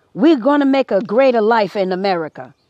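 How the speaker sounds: put-on assumed Italian accent. Talking about immigrants at Ellis Island, voicing Italians, imitating an Italian accent. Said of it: "Italians would say".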